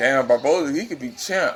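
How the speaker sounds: plain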